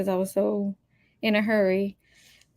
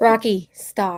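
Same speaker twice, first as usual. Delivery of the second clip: loud yelling; 6 dB louder than usual. Telling the dog to stop: yelling at the dog. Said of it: "I'm yelling at my dog".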